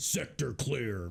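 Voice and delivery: mechanical robotic readout voice. Describing a hamster's robot ball that talks for it, in a deep robotic voice. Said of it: "it's like this really deep robotic voice".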